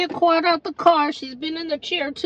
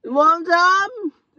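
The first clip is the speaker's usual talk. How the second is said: put-on tipsy, drunk-sounding voice; 2 semitones higher than usual. Asked to show acting as a drunk: fake drunk voice. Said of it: "Show everybody your acting career as a drunk".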